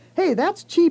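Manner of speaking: eager, excited, very high-pitched burst. The narrator reacts to Mom reading out a class listing, excited. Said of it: "I added excitedly".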